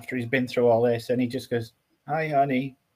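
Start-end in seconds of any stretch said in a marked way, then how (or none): 2.1-2.7 weary, worn-out, beaten-down defeated voice. Retelling a film scene where a battered hero greets someone: imitating a weary, defeated voice. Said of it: "he sounds so weary and defeated".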